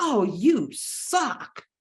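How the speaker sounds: real loud, high, swooping, tossed-back delivery. Retelling what a coworker said about a lunch order: imitating a loud retort. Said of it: "real loud".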